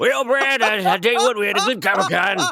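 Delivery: put-on drunk, smoky-voiced old hobo voice. Host opening this week's comics show after comic con, sounding like a drunk smoky hobo. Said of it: "a drunk old smoky hobo".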